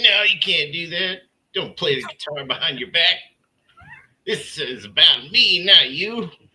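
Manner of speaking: bossy, high, loud scolding rant.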